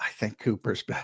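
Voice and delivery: hushed, breathy whisper. Retelling what a high-profile Eagle said after looking around: imitating a whisper. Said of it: "and he whispered".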